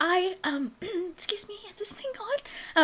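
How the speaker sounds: tiny, small voice, high and soft. Voicing a princess speaking into a microphone: tiny voice. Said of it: "in her tiny voice".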